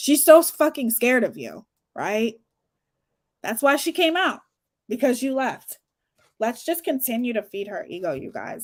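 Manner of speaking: heavy, obvious, swooping sing-song sarcasm. Responding to another speaker's claim about why she came out: sarcastic tone. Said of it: "can you hear my sarcasm?".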